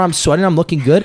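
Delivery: plain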